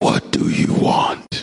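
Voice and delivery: put-on growl muttered under breath. Retelling how the lady behind the counter greeted him, imitating a growl under breath. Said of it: "growling under her breath".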